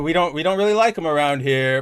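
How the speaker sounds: reserved, understated, polite British manner. Imitating a writer reacting to a disliked character: reserved British manner imitating Al Ewing. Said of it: "that reserved Britishness in Al Ewing".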